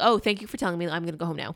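ordinary delivery

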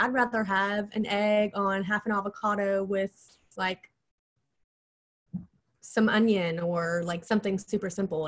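ordinary talk

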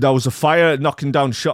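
poor Manchester accent attempt. Quoting a person who saw the lobster man's appearance, in a bad Manchester accent. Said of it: "I can't do a mank accent".

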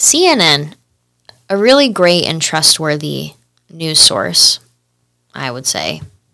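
heavy, sing-song sarcasm. Introducing a story about a news outlet: heavy sarcasm. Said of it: "high sarcasm".

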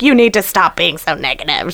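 put-on snappish tone. Retelling a drive over potholes, the speaker reenacts a worried passenger getting told off, retelling snapping at someone. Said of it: "I kind of snapped".

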